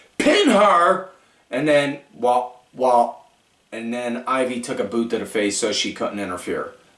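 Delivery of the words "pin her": loud yell. Retelling a match in the ring, quoting one wrestler yelling at another: retelling a yell. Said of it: "Candice just yells at Indy".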